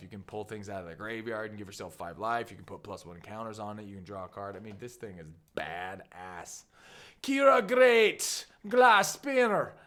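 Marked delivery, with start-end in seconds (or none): 7.2-9.7 slight Irish accent, very high and very loud. Reading a card name aloud, slipping into a slight irish accent. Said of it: "almost had an Irish accent there".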